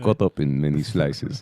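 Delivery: put-on Russian accent. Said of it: "I want to sound Russian today".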